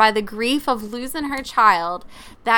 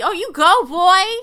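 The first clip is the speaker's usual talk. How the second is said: high, very slow, stretched, drawn-out cheering yell; 8 semitones higher, 4 dB louder than usual. Retelling what the speaker yelled at the TV during a show, retelling a yell at the TV. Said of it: "that's when I yelled at the TV".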